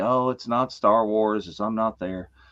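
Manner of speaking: plain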